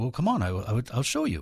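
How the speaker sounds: put-on British accent, easygoing tone. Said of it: "in his British voice".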